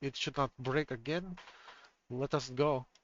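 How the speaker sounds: put-on German accent. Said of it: "You're making him sound more Russian than German".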